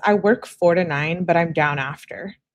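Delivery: ordinary delivery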